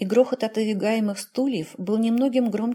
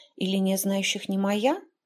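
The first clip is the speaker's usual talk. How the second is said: ordinary delivery, nothing marked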